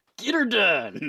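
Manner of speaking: put-on loud old-timer cowboy trucker voice. Suggesting a voice for the penis character, doing an old cowboy trucker voice. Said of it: "like a old cowboy trucker".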